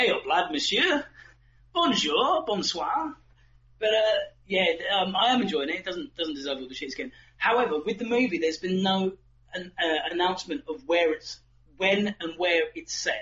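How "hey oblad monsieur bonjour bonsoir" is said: put-on slow Northern English accent. Imitating French characters in a game who speak like Northerners: Northern English accent. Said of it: "you've got a couple of Northerners up there".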